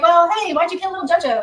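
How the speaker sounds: breezy, nonchalant, offhand, no-big-deal casual tone. Mimicking someone asking about a killing: mock casual, no-big-deal tone. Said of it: "it's just no big deal".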